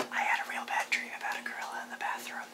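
fast whispered delivery.

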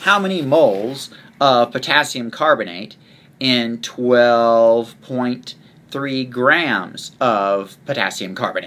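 broken-up, stop-start, choppy, halting reading. Reading out a practice problem for the listener to work: choppy, halting reading. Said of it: "couldn't have read that any more choppy".

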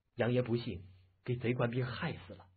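plain

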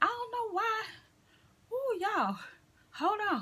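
breathless, winded, catching air. Speaker talking to viewers about a website, out of breath. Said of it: "I had to catch my breath".

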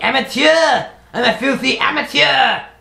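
shrill, angry French accent. A speaker talking about making mods: put-on angry Frenchman voice. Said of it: "I'll stop speaking in an angry French, speaking like an angry Frenchman".

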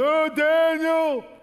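very high, very loud, shrill, mournful wailing cry. Explaining the word lamenting while telling of the king crying out: lamenting cry. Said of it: "That's lamenting".

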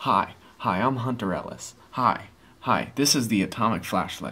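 slow, drawled, drawn-out host-style delivery. Mocking the Hunter Ellis ad where he walks up and greets viewers. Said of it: "He's walking up and he's like".

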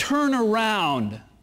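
firm, very emphatic, insistent tone. Picturing God telling people to change direction: imitating a very emphatic voice. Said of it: "telling us very emphatically".

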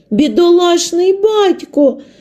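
sudden, very high outcry. Mary, hearing of the refused ship, crying out. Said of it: "скрикнула Мері".

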